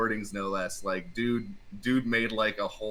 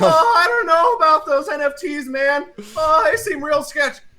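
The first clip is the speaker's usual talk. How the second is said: put-on nervous teen cartoon voice, higher and louder; 10 dB louder than usual. Doing Rick and Morty voices for a friend: Morty voice. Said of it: "I do a lot of, uh, Rick and Morty".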